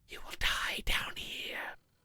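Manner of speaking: chilling, cold, ghostly whispered wraith voice. Reading a story to chat, voicing the wraith speaking to the adventurer: whispering like cold wind. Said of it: "the wraith whispers in a voice like cold wind".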